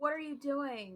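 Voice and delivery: high-pitched yell, projected loudly. Voicing a character who yells at Izra: yelling at someone. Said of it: "I'm gonna yell at Izra".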